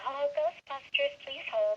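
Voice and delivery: younger, sweeter voice. A voice actor recalls an audition, showing the voice used: younger, sweeter version of own voice. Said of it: "my voice, but just a little younger and sweeter".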